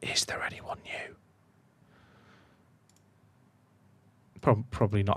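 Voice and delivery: whispered under the breath, hushed, very quiet. Speaker addressing chat about new team intakes, whispering. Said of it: "I don't know why I'm whispering".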